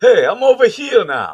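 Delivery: bad put-on voice, very high and loud squeal. Telling listeners you're over here now, with a messed up, scratchy throat, bad Dice impression. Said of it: "My bad dice impression".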